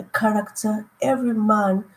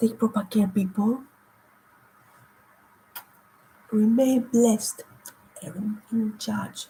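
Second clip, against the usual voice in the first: talking slowly, barely able to talk, strained. Signing off while barely able to talk: talking slowly, barely able to talk. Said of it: "I'm talking slowly because".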